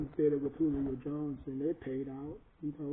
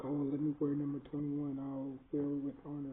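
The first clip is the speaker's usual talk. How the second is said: ordinary talk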